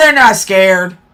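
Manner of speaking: slow, with they're leaned on. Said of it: "They are not scared".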